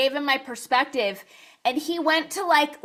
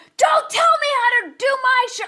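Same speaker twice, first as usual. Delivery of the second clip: mock very high-pitched, unhinged, angry snap; 11 semitones higher, 4 dB louder than usual. Show guest retelling how the host snapped at them, imitating someone snapping angrily. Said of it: "it was like psycho".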